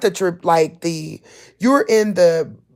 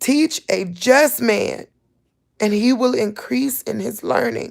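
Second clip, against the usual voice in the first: tearful voice on the verge of crying; 3 semitones higher, 4 dB quieter than usual. Reading scripture aloud to listeners, about to cry. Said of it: "I'm about to cry".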